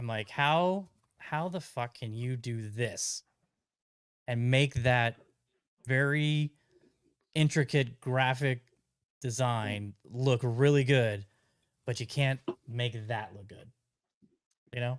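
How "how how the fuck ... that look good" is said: ordinary delivery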